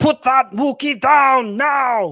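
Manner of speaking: very loud, high, slow, deliberate put-on voice. Taking turns trying to be Arnold Schwarzenegger, in an Arnold Schwarzenegger impression. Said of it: "Let's just alternate just trying to be Arnold Schwarzenegger".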